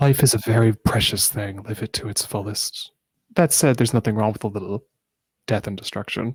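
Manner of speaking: unnerving, unsettling delivery with laughter. Voicing a character whose words are called unnerving: unnerving laughing delivery. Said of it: "saying that in a very unnerving way".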